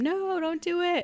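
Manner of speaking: very high, acted-out scream. Retelling a movie scene, imitating Barry screaming: imitating Barry screaming. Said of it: "Barry screams at him".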